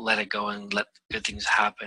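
normal talking voice

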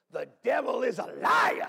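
emphatic pulpit delivery, slow and shouted like a preacher. Showing a congregation how to say the line in church: emphatic church delivery. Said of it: "you can't say it like that in church. You gotta go".

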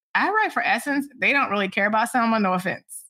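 ordinary delivery

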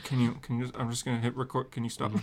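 ordinary delivery

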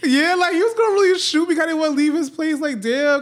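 high, loud, tearful crying voice.

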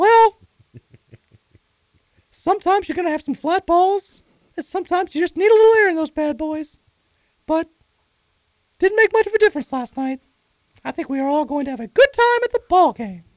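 very high little cartoon mouse voice. Asked to give some Mickey, the speaker answers in Mickey Mouse voice. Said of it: "Can you give me some Mickey?".

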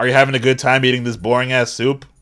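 loud yell. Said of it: "Look how loud I have to yell".

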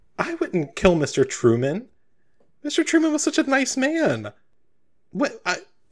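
very high, swooping, utterly lost and bewildered. Voicing a character accused of murder by a guest: very confused. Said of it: "she's just, like, very confused".

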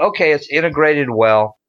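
plain

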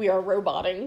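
usual speaking voice

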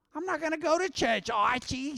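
grating, very high-pitched, annoying put-on voice. Retelling what a sitcom wife said, imitating an annoying voice. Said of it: "She had a really annoying voice".

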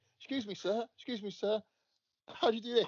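high, polite little schoolchild voice. Acting out a kid asking the teacher a question: playing a kid asking the teacher. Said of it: "if Ed was my teacher when I was a kid".

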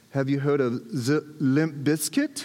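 put-on speaking with German accent. Retelling answering when people asked his favorite band, German accent. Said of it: "I showed up with my German accent".

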